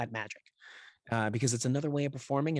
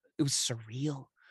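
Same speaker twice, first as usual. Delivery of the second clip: usual speaking voice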